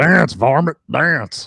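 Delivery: loud, high cartoon cowboy holler. Answering a call to do Yosemite Sam: Yosemite Sam voice. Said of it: "We are joined by the Yosemite Sam".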